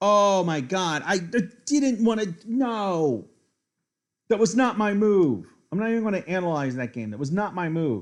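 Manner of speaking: very loud, very high, shrill, furious rant. Reacting to a bad move in a chess game: angry and frustrated. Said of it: "I'm so angry".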